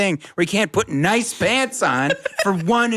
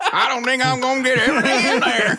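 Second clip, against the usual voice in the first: Southern-sounding speech; 6 semitones higher than usual. Showing how someone would say a line, in a Southern accent. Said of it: "like you're from the South".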